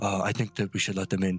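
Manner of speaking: whispering. A game master voices a guard's companion who elbows him and whispers, whispering. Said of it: "elbows him and like whispers".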